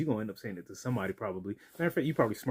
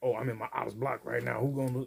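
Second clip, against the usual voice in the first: put-on young tough-guy, wannabe gangster talk; 2 semitones higher than usual. Mocking how the other person talks: imitating someone talking like a gangster. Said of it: "You sound like".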